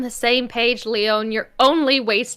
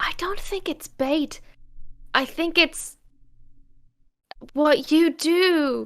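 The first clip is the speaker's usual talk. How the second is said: lowered, hushed, slightly high voice; 6 semitones higher, 4 dB quieter than usual. A player speaking in character replies to another character, in hushed tones. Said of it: "in hushed tones".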